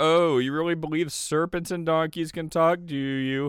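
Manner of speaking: play-acted snide tone. Voicing a skeptic's objections to believers, in a mock snarky atheist voice. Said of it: "That's my snarky atheist voice".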